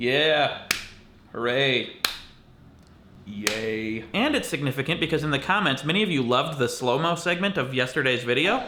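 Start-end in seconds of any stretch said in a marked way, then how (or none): 0.0-4.0 deadpan, nonchalant, unexcited cheer with drawn-out yay. A video maker marking his eight hundredth video, as a nonchalant celebration. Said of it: "Nonchalant celebration".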